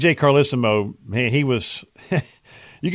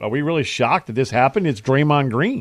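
ordinary delivery

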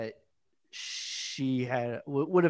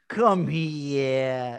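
fake New York accent with "here" drawn out. Quoting a weird line from the episode: Christopher's fake New York accent. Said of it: "sounded like when British people try to be, like, New York".

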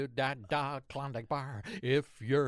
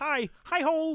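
put-on puppet frog voice; 5 dB louder than usual. Showing another speaker a voice: Kermit the Frog voice. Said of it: "Kermit the Frog coming in".

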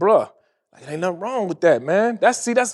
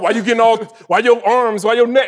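mock frustrated tone, higher; 4 semitones higher, 3 dB louder than usual. Retelling how a friend reacts in an argument, imitating him getting frustrated. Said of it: "he'll get frustrated and just be like".

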